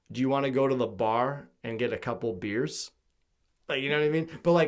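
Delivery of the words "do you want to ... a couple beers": plain Midwestern American accent. Showing how a midwestern american would ask about beers: midwestern american accent.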